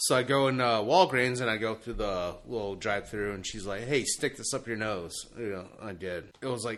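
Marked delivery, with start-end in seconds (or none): none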